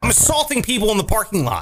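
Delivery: direct, blunt, aggressive and forceful. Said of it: "very direct and aggressive".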